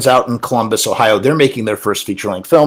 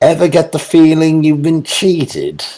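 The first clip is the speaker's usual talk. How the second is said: high put-on voice with slight lisp; 5 semitones higher than usual. Showing how the line must be done: put-on voice with slight lisp. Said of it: "you have to do like a little bit of like a lisp, like kind of, and then you have to do the the ph. I mean the f instead of the ph".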